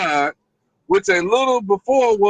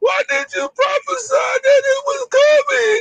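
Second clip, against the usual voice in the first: acted sobbing, very high crying whine. Speaker acts out people questioning the prophets, with mock crying. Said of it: "That's how you crying".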